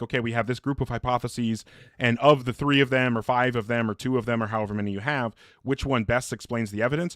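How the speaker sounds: ordinary talk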